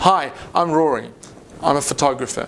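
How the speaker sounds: hits the opening hard, then eases off. Showing how people on camera start their speech: starting loud then settling. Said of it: "start their speech quite loudly and then settle".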